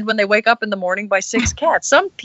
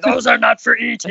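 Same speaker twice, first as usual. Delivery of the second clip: rough, creaky, growling orc voice. Retelling a warning to the pet about the cats, in an Uruk-hai voice. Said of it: "I had to use my best Uruk-hai voice from Lord of the Rings".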